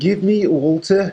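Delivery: mock Birmingham accent.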